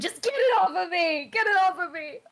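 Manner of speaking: very high, very loud, panicked frantic scream. Retelling what she screamed while they tried to help her, retelling her screaming. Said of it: "she is just absolutely screaming at this point and just going".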